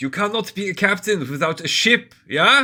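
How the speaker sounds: very loud, very high, shrill shout. A knight answers a player banging on the roof, shouting down. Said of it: "Shouts down".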